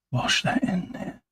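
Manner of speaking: dropped into a whisper. Painting and touching up dark areas, whispering. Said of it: "I went into whisper mode then".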